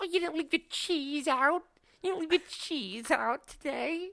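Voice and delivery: high mobster voice drifting into British woman's voice. Describing guys smacking people with little baseball bats, the speaker voices one, failed weird mobster voice. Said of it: "that was supposed to be like a weird mobster".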